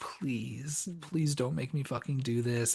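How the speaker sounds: imploring, hard pleading, begging voice. Retelling a scene, pleading with the mom: imitating someone begging. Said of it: "begging her".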